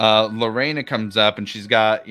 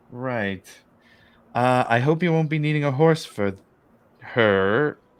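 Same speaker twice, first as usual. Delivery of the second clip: nervous, apprehensive, wary delivery; 3 semitones higher than usual. Voicing the stable master greeting a new arrival: apprehensive. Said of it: "very apprehensively".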